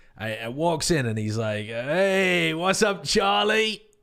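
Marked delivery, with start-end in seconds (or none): 1.7-3.8 put-on slightly tipsy, high voice, stretched "hey". Retelling what a tipsy man from the pub said: imitating a tipsy man. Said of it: "a guy comes in a bit tipsy".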